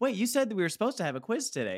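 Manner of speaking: squeaky, high, eager know-it-all voice. Retelling how a classmate always on top of the class reminded about quizzes: imitating an eager know-it-all classmate. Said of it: "that energy".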